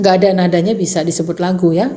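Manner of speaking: ordinary talk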